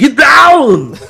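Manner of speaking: pitched very high, drawn out with a falling stretch. Trying a quick movie-star impression after another speaker: Schwarzenegger impression. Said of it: "I'll try mine".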